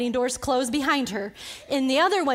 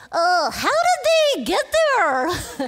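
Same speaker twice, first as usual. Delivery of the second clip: full-on mocking tone, high and slow; 6 semitones higher, 5 dB louder than usual. Retelling how her husband answers dumb questions, imitating husband's mocking voice. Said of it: "In his most mocking voice".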